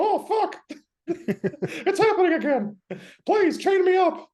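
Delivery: high, loud, squeaky falsetto. Joking about a Dr. Mickey and Mr. Hyde, the speaker does a Mickey Mouse voice. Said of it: "I can't even do a believable Mickey Mouse impression".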